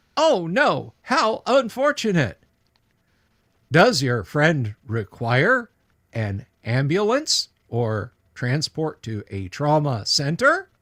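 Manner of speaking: mechanical man robot voice. Voicing a robot answering a request for help with injuries: voicing a mechanical man. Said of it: "Mister the Robot".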